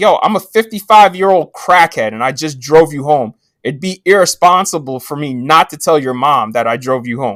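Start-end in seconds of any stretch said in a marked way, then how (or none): none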